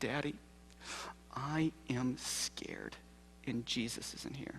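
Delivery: put-on choked child's whisper, very soft and slow. Retelling a scared child's words at bedtime: imitating a choked-up child. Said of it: "choked up".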